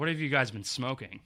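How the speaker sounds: ordinary delivery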